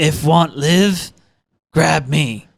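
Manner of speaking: very slow, broken caveman-like speech. Retelling what a Titan shouts from a falling tower: imitating cavemanish speech. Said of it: "She's kinda cavemanish there".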